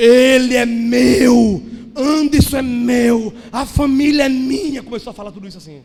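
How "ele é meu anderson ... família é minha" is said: very loud, very slow, deep, booming demonic bellow. Speaker retelling what a demon shouted through a woman's mouth, imitating a deep male demon shout. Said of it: "o demônio gritou com a voz de homem grave".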